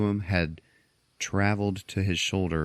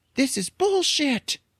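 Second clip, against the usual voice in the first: very high woman's voice; 4 dB louder than usual. Retelling a movie scene as Bumblebee speaking in a woman's voice. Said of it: "Bumblebee in this lady's voice is like".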